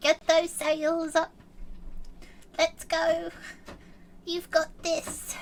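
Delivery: fake, forced, eager, enthusiastic pep. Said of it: "he's trying to be really enthusiastic and he's like".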